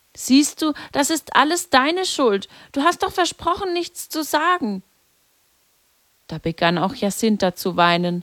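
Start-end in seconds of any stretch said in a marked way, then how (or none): 0.2-4.8 reproachful, accusing, pitched-up scolding tone. A brother speaks to his sister as their upset friend approaches, reproachful. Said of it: "sagte Francesco vorwurfsvoll".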